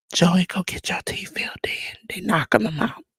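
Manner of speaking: soft, unvoiced, breathy, hushed stage whisper. Addressing a wrestler by name after announcing he will whisper: whispered. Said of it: "I'm gonna whisper to you".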